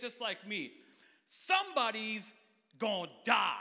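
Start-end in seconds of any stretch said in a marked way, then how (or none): 1.3-3.5 loud, forceful chest voice, very slow and drawn out. Speaker models a sentence for listeners to copy, said with the chest. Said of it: "you got to say it with your chest".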